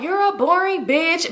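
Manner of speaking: teasing through laughter. Retelling a girl at a club calling someone boring: imitating someone laughing while talking. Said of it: "But she's laughing with it".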